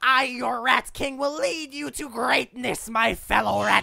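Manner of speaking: acted shouting voice. Voicing a rat-cult leader proclaiming a sign to followers: character yelling as rat king.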